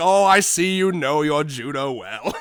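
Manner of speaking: put-on snide voice. Retelling how a man being arrested mocked the cops, mock-snide remark.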